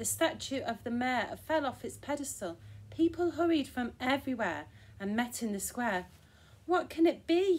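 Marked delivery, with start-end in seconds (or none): 6.6-7.6 loud, high, drawn-out alarmed cry. Reading a story, townspeople gathered in the square after the shaking; called out. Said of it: "they cried".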